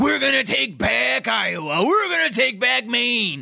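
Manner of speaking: very high, rough, wrestler-style promo voice. Imitating a politician at a rally, talking like a wrestler: imitating Howard Dean like Macho Man. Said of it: "he's talking like Macho Man in here".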